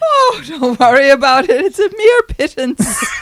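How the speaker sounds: put-on brogue, high and slow, words drawn out. Retelling her reply when offered the money owed, imitating a brogue. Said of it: "In a brogue, she says".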